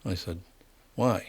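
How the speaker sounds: ordinary talk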